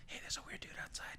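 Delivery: quick, hushed, whispered little plant voice. Voicing a tiny plant answering the druid's greeting, in a whispering plant voice. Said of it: "And it whispers".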